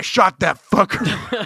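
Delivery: slow, angry, fed-up put-on man's voice. Imagining a man whose fence got broken, imitating a pissed-off guy. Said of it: "some pissed off guy".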